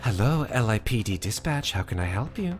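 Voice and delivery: sonorous, calm, low, soft, steady voice. Speaker shows what you hear calling Dispatch, in a sonorous, calm Dispatch voice. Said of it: "very sonorous, very calm voice".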